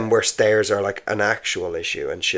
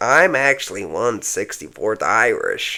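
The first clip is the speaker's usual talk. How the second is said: put-on American accent. Mocking Americans who claim Irish heritage; imitating an American accent. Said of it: "American accent was much better than mine".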